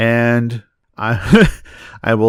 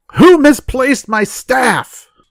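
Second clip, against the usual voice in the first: piercing, very high, loud holler; 13 semitones higher, 6 dB louder than usual. After rattling and shoving things, a player's character calls out: loud shout. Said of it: "then I'll shout loudly".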